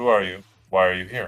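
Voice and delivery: stern, severe, demanding tone. Game narrator voicing a woman questioning two travelers, stern. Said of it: "she's kind of says sternly".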